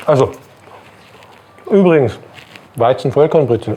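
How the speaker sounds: talking with mouth full while eating. Tasting a bread roll on camera, talking with mouth full. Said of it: "ich hab einen Mund voll".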